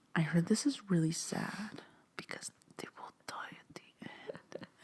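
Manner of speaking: barely audible, very hushed whisper. Retelling a joke said at a bookstore book display: imitating own whisper. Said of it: "And I whisper it like that".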